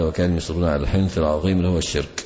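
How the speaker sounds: ordinary talk, nothing marked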